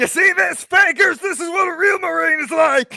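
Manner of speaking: shrill, very loud, high-pitched bellowing shout. Playing a marine in a game, taunting the fakers: shouting in character. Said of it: "I'm just gonna be shouting".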